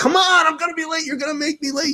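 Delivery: mock very high, shrill, high-pitched yelling. Retelling rushing his son out to a gig, acting out yelling at him. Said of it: "And I'm yelling at him".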